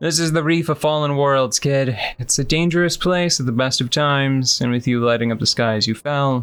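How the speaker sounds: ordinary delivery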